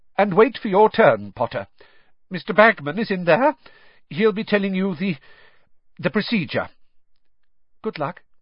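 shaky, unsteady voice. Reading a novel, a professor tells a student where to wait: shaky voice. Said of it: "in a rather shaky sort of voice".

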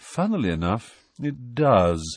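bored, uninterested. Reading a character's answer to Harry's question, bored. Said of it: "said nearly headless Nick in a bored voice".

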